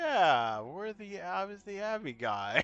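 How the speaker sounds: soft, swooping, drawn-out, obviously sarcastic tone. Retelling a man's reply when asked if he's the Abby guy, retelling a sarcastic reply. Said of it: "in a obviously sarcastic tone".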